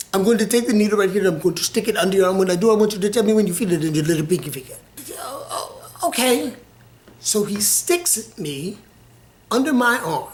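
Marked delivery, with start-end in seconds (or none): 0.1-4.8 put-on fast, rattled-off, thick Indian accent. Retelling a man's instructions before sticking a needle under the speaker's arm: heavy indian accent, very fast. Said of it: "spoke really fast and had a heavy Indian accent".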